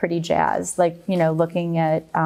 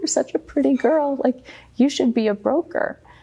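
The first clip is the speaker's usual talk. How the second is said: high, weepy, tearful, acted-out crying voice; 8 semitones higher than usual. Retelling what a father used to say: imitating father crying.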